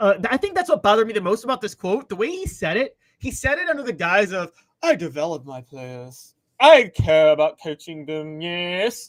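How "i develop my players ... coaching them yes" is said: posh British voice, low, slow and deliberate. Mocking a coach's quote about developing players: posh Calipari voice. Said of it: "I think that's a new British voice".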